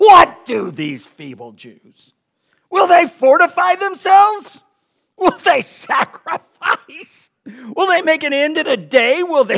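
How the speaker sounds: very loud, very high, shrill, swooping jeering tone.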